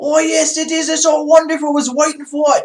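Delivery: bad, very high English accent drifting into Australian. Talking about people caring about the royal baby, the speaker tries a bad English accent. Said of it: "it sounds Australian".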